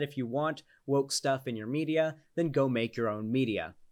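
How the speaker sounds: ordinary talk, nothing marked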